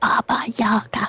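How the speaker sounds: hushed, whispering voice. Asking an NPC a question in character, whispering. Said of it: "I'm gonna whisper this part".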